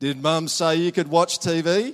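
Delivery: very loud, pointed delivery. Example of pinging a sibling while walking past the tv room, very loud. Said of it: "You say it very loud".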